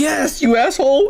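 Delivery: sobbing, upset, high, tearful crying voice. Retelling a movie scene with Deadpool, imitating Spider-Man crying. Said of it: "And he's all crying".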